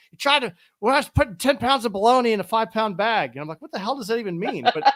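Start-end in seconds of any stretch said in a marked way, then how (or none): 0.2-3.3 put-on loud New York accent. Quoting an old boss from new york, the speaker imitates his new york accent. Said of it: "had a New York accent".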